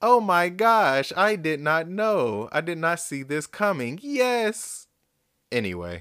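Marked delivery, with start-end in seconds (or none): 0.0-4.9 bad put-on girl voice, high, slow, yes stretched. Acting out her answer to a proposal in front of family, in a bad girl voice. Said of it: "That was a bad girl voice".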